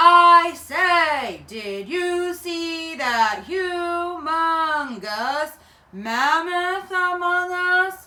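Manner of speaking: very loud, very slow, booming, drawn-out giant voice. Taking big giant steps and saying things the way giants talk, in a loud giant voice. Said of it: "that's a big loud voice".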